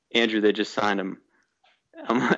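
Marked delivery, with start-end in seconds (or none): none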